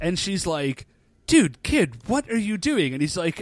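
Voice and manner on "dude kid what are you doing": angry, furious, high-pitched telling-off. Recapping a story where Rin gets home to find him, imitating Rin, mock-furious.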